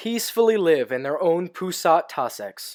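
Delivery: plain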